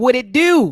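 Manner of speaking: very loud, high-pitched Baltimore accent. Greeting the other host the way people say it in Baltimore, Baltimore accent. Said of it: "in my Baltimore accent and words".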